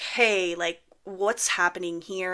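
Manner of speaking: slow, alarmed and uneasy, panicky voice. Retelling what he said to a man over a suspended license, retelling own panicked words. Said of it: "So like I start kind of panicking".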